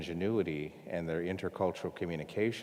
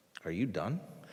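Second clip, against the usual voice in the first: put-on affectionate, caring, tender tone; 2 semitones higher than usual. Retelling what a listener asked after hearing the speaker out: imitating someone speaking lovingly. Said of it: "in a really loving way".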